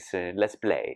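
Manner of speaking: English spoken with a Spanish accent. Speaker showing the Spanish style he wanted to bring, Antonio Banderas Spanish accent. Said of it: "talk like this".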